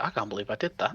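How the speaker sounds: muttering under breath. Voicing a character muttering to himself after a stunt: muttering under his breath. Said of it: "under his breath".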